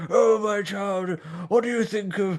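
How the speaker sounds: put-on elderly vicar voice. Describing a bit, the speaker quotes the vicar in an old man vicar voice. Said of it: "vicar with an old man voice".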